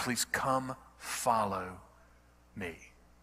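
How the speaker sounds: put-on gentle, loving but firm, softly spoken. Speaker retelling how Jesus asked a man everyone hated to follow him: acting out a loving but firm voice. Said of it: "In a loving but firm voice".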